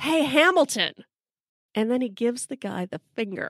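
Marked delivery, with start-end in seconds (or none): 0.0-0.9 high-pitched jeering yell. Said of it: "he yells out".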